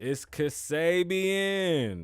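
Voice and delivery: slow, high-pitched hype-man announcer voice.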